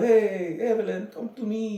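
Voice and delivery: very slow put-on Italian accent. Acting as a short Italian guy chasing after Evelyn, in an Italian accent. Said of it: "he was Italian".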